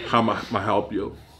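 put-on grudging, contemptuous, dismissive voice. Imitating fast-food counter workers' greeting, which meant they didn't want to help: imitating a contemptuous service greeting. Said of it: "they had a way of saying".

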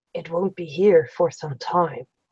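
soft, hushed half-whisper under the breath. A narrator voices a man glancing sideways at the listener: half-whispering. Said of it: "he whispers".

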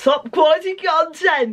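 put-on grand, admiring tone, high and slow.

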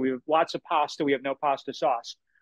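plain

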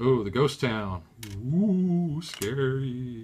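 loud, spooky, haunting put-on ghost voice. During a board game, a player announces the ghost town, doing a ghost impression. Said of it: "your impersonation of a ghost".

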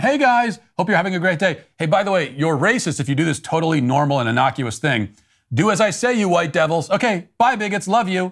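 play-acted, sarcastic, high, sweetly cheerful tone. Speaker mocks a tone they call repugnant, using a mock-cheerful smiling tone. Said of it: "this cheerful smiling routine is just intolerable".

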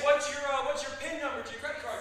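ordinary talk

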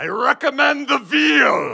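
very loud, very high-pitched, slow booming pirate voice. Ordering in a very quiet restaurant: loud pirate voice. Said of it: "In a loud pirate voice".

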